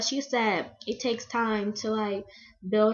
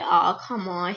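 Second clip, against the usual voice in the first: put-on country accent; 3 semitones lower, 4 dB louder than usual. Recalling someone's answer to a question about two actresses: imitating Jackson's country accent. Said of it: "He got that country accent".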